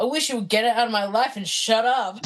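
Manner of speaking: fake awkward teenager voice. Retelling how the character answers Uncle Rico: imitating Napoleon Dynamite. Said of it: "Napoleon's like".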